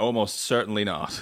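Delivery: fake flat, expressionless tone. Podcast guest recalls their answer to a question, retelling it deadpan. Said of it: "I replied deadpan".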